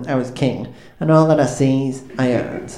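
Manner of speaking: boastful, proclaiming cartoon sailor voice. Walking into the kitchen and proclaiming something to Mum and Dad at breakfast, in a Popeye voice. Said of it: "I did say it in that Popeye style".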